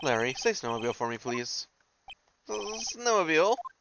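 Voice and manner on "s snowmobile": acted stammering, stuttering. Voicing a witness asked to say snowmobile: acted stammering. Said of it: "why are you stammering".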